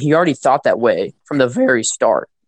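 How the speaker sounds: cracking, breaking voice. Talking about a film character, the speaker's voice cracks mid-sentence. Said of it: "Sorry for the voice crack right there".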